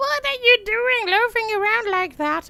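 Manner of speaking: very high, loud, screechy crone voice. Reading a second-person story aloud, voicing a woman addressing you, screechy voice. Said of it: "she addresses you in her screechy voice".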